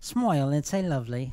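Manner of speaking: put-on English accent. Saying the catchphrase again after being asked to: English accent. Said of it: "Can we do it in an English accent?".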